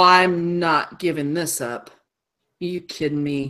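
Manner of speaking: contemptuous sneering tone. Voicing an enemy who refuses to give up after being hit: sneering. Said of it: "And he sneers at her".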